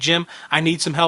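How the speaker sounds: ordinary talk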